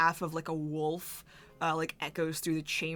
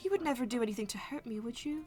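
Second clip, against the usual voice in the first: sugary, sweet, innocent-sounding, pitched-up voice; 7 semitones higher, 3 dB quieter than usual. Voicing a character making herself small to another character: sweetly. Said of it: "looks at you sweetly".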